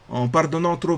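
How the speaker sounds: clumsy fake Italian accent. Quoting an Italian Renaissance writer in French; bad Italian accent. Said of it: "J'ai essayé de faire un accent italien".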